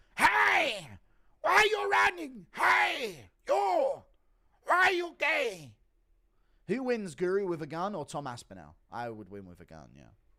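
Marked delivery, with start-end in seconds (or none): 0.2-5.8 very high, slow, every word stretched out. Reading a viewer request, impression of a police officer arresting someone: Yoel Romero impression. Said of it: "Impression of Officer Yoel Romero arresting John Jones".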